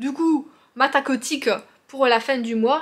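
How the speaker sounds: loud accent from the south of France. A speaker talking about knitting a blanket, slipping into a southern french accent. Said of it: "je prends un accent du sud".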